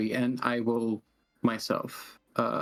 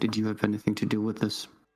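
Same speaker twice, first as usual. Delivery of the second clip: hushed whispered aside. Playing a character at a hearing, stepping back to ask another character, whispering. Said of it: "I just whisper to Azure".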